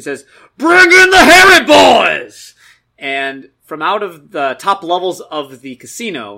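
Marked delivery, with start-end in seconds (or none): 0.6-2.5 very loud, very high-pitched loudspeaker-style bellow. Game master voicing the NPC over his hover sled loudspeaker, Gorge bellowing. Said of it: "And he's gonna bellow".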